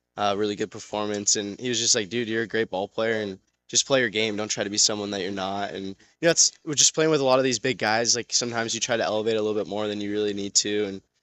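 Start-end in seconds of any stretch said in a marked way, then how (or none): none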